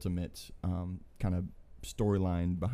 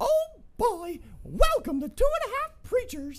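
cartoon mouse voice, much louder; 5 dB louder than usual. Doing character impressions to welcome listeners to the show, Mickey voice.

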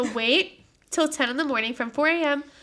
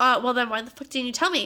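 plain

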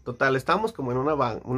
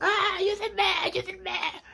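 very high, panicked mock scream. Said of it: "empezó a gritar".

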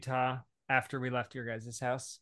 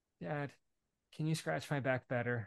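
put-on, sugary, sweet, nice-sounding kid voice; 5 dB quieter than usual. A father retells his daughter asking him for something, imitating a child asking sweetly. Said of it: "but it was all so sweet".

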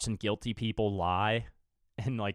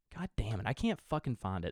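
frustrated, aggravated, quieter; 5 dB quieter than usual. Searching a library for a show's name and failing: aggravated. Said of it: "Sorry, I'm getting aggravated".

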